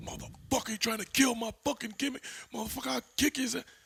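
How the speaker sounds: mock very high-pitched, enraged, furious cursing rant. Retelling how a man reacted when someone was supposed to kill his finish, imitating a mad, upset man. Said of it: "He's fucking upset".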